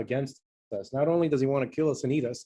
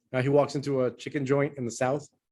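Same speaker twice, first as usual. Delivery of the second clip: plain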